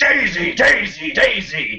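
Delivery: screaming.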